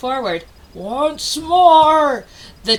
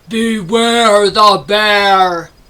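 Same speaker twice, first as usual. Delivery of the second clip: great booming, drawn-out, bear-like growl; 2 semitones lower, 4 dB louder than usual. Narrator voices a bear arriving after midnight as the penguins sleep, great growly booming voice. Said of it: "a great growly voice boomed out".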